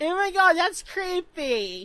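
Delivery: put-on high, drawn-out girly schoolgirl voice. Imitating a group of schoolgirls reacting to something: girly schoolgirl voice. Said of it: "that voice has come to me over time".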